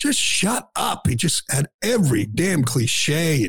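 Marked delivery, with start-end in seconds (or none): 0.0-1.1 pitched-up, high yelling outburst. Complaining about a TV analyst, retelling yelling at the screen. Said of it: "I'm yelling at the screen saying".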